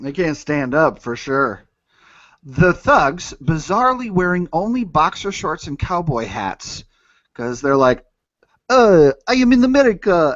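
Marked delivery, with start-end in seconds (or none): 8.7-10.3 put-on French accent, higher and louder. Imitating tourists in a comedic bit: french accent. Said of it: "That's my French accent".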